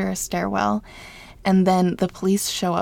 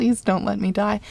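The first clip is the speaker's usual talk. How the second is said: ordinary talk, nothing marked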